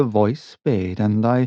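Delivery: ordinary delivery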